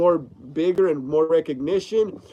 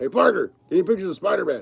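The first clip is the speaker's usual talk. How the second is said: demanding, bossy, commanding boss voice. Saying his voice is off today, the speaker still does J. Jonah Jameson. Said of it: "Jonah Jameson voice".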